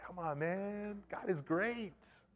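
soft, laid-back, chill hippie voice. Contrasting two prophets' approaches, the speaker voices Zechariah as a laid-back hippie. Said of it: "it's to me like kind of like a hippie vibe".

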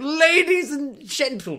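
circus ringmaster announcer voice. Reader showing how they picture a character's voice, ringmaster voice. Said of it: "sort of ringmaster kind of voice".

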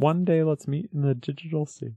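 whispered, hushed low voice. Repeating a phrase while another speaker critiques the delivery: low whisper. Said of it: "It's because you're whispering it".

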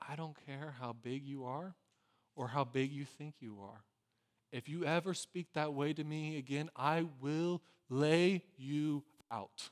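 very quiet, low, hushed, menacing half-whisper. Retelling what the speaker's mom half-whispered to them, noses touching: very quiet half-whisper. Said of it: "In a very quiet voice, she whispers".

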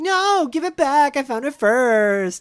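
very high, shrill, stretched-out wailing scream. Recapping a scene where Sean hears Corey scream, imitating Corey screaming. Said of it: "hearing Corey scream".

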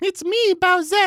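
put-on loud, high-pitched girl voice. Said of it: "He'd do the high-pitched voice".

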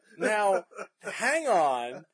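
slow, laughing delivery.

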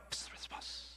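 fast, hushed whisper. Leading a group in saying a word again: quieter and faster. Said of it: "Quieter and faster".

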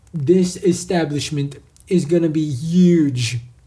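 slow delivery with "huge" stretched out long. Starting a round of impressions with a regular Donald Trump impression. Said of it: "first I gotta do a regular Trump".

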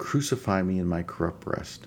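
usual speaking voice

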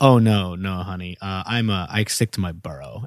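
mock, slow, dismissive, scoffing tone. Retelling a Manhattan art guy's reply about Brooklyn: imitating a scoffing reply. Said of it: "he just literally, like, scoffed".

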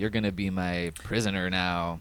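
gruff woman's computer voice. Recounting a show's jail scene, quoting the computer cellmate in a butch lady voice. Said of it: "a computer who's like a butch lady voice".

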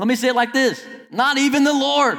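very high-pitched, full-out yell. Speaking to listeners, the speaker yells, then apologizes for yelling. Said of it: "Sorry for yelling".

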